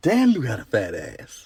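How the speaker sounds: slow, hushed half-whisper under the breath. Retelling what a man walking past in the aisle half-whispered to her: retelling a half-whisper. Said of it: "he kind of whispers to me".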